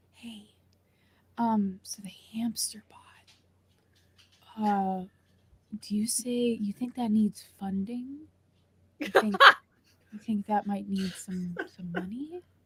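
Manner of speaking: soft, hushed whisper under the breath. Speaking in character to someone called buddy, whispering. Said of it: "I'm like whispering this".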